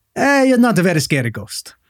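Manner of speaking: indifferent, unimpressed Italian voice, shrugging tone. Acting out an italian unimpressed by a ghost: indifferent italian person. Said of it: "all I can picture in my head is being like".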